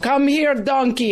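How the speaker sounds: bad, rough, put-on Austrian accent. Retelling how he calls a donkey over to feed it, do a bad Austrian accent. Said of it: "He's got the Austrian accent".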